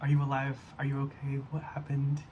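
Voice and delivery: ordinary talk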